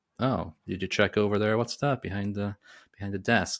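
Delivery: ordinary delivery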